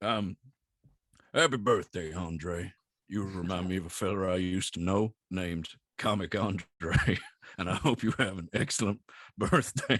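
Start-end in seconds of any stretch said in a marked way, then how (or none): 1.3-10.0 very low, deep put-on character voice. Wishing a listener happy birthday on request: Arthur Morgan voice. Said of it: "you did the Arthur Morgan voice".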